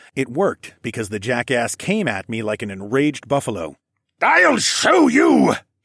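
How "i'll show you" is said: very high, very loud, raw, rough roar. Reading a fight scene, a taunted man charges the narrator, roaring. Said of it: "he roared".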